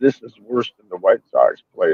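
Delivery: quiet, hushed stage whisper. Retelling what was said into a buddy's ear at the bar: imitating his own half-whisper. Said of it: "I whispered in my buddy's ear".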